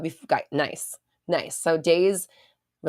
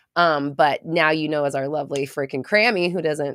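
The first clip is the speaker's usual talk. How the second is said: normal talking voice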